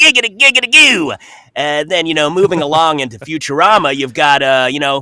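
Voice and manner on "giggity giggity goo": very high, loud, squealing cartoon-character voice. Showing the animation voices: Quagmire voice. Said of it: "you can't talk about a Family Guy without a Quagmire".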